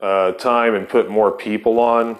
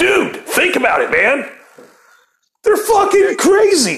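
very high, animated, swooping sing-song voice; 3 dB louder than usual.

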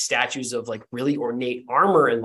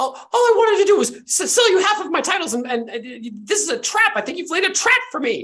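put-on screaming, much higher. Retelling a scene where a lady accuses a man of laying a trap, Lady Landauer screaming. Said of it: "screams out like".

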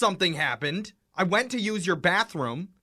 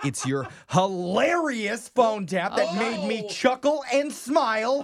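put-on anger, aggressive push, climbing pitch; 3 semitones higher than usual. Praising a phone tap in a put-on way: mock aggressive. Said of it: "Why so aggressive?".

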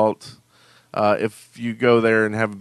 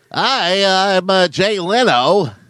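pitched-up goofy voice with a long, stretched "hi"; 9 semitones higher, 4 dB louder than usual. Introducing himself as a former talk show host: Jay Leno impression. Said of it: "Is that a good impression?".

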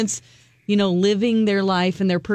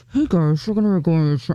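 indistinct mumbling announcement over a microphone; 3 semitones lower than usual. Retelling how some pilots talk on the mic: imitating a pilot mumbling. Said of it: "some of them mumble on the mic".

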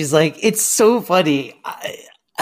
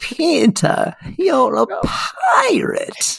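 put-on creaky, high old-lady voice, drawn out; 12 semitones higher than usual. Quoting a favourite line from Hook: old Wendy from Hook voice. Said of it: "And she goes".

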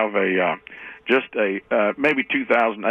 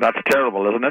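ordinary talk

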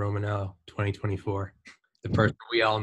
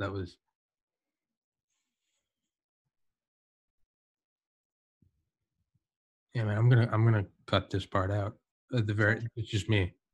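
voice holding back tears. After hearing the other speaker's advice, holding back tears. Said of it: "I'm legitimately trying not to tear up".

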